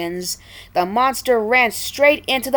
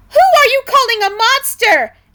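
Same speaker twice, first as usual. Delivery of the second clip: very high, shrill, angry snapping; 13 semitones higher, 7 dB louder than usual. Narrator reads the voice snapping from the bottom of the pit, Matilda, angry snap. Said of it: "an angry voice snapped".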